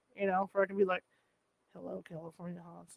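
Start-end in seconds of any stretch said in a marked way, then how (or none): 1.8-2.9 low, hushed, creaky radio voice. Explaining the voice they want, the speaker tries a Roz Doyle voice. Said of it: "going for that Roz Doyle sound from Frasier".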